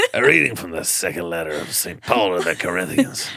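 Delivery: raspy, guttural priest voice with a reading tone. Joking about a smoking priest, doing a raspy sermon voice. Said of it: "Raspy sermon".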